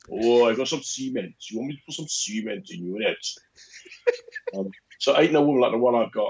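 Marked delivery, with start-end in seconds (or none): 0.1-3.2 put-on Welsh-accented voice. Retelling being asked to speak in that welsh voice, welsh voice. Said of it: "speak in that Welsh voice for me".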